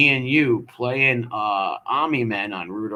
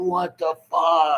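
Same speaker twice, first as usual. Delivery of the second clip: mock high-pitched screaming outburst; 6 semitones higher than usual. Retelling a kid pulling down a rack, imitating the guy screaming. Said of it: "the guy starts screaming".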